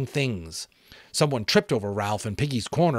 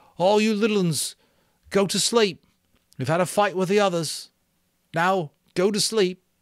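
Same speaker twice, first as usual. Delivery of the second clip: very high, trembling, quavering voice; 9 semitones higher, 3 dB louder than usual. Ralph calls out to the little ones amid screams, in a quavering voice. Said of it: "Ralph called out in a quavering voice".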